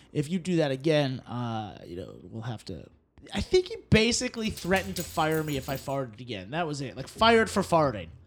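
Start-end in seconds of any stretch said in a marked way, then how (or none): 0.2-2.9 grave, dead-serious tone, low in pitch. Retelling the manager's warning about farting: imitating his serious tone. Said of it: "And he was serious".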